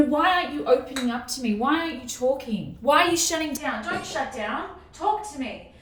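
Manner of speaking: normal talking voice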